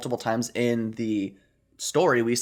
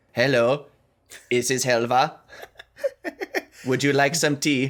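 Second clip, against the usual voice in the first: robotic Swedish-tinged voice, higher, louder; 2 semitones higher, 3 dB louder than usual. Asked how Helva's voice sounds, the speaker demonstrates a robotic Helva voice with Swedish spin. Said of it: "put like a Swedish spin on it".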